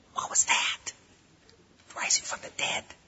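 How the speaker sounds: unvoiced, hushed whisper. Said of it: "they're in the back whispering".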